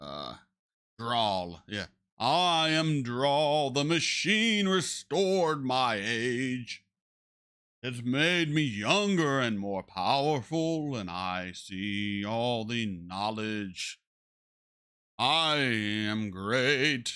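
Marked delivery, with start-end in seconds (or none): 2.2-17.2 theatrical, grand, overacted, proclaiming delivery. Imitating a character on the show who talks as if great and wise: imitating Draal's theatrical voice. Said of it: "he has a very theatric voice when he speaks".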